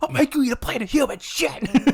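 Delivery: play-acted menacing scream, pitched very high. Acting out a more extreme reply: mock screaming.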